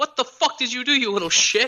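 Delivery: mock very high, screamed outburst. Speaker recalling a bus driver running back to him: retelling bus driver's screaming. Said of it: "starts screaming at me".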